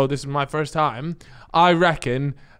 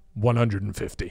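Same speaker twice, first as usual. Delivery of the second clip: deep, low, deepened put-on voice; 5 semitones lower, 5 dB quieter than usual. Retelling how they answered when asked the price, deep voice. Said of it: "with the deep voice".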